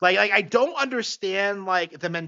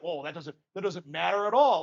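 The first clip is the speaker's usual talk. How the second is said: mock dismissive, brushing-off tone; 3 dB quieter than usual. Retelling how Joe dismissed the game's price: imitating Joe brushing it off. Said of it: "he just brushes it off".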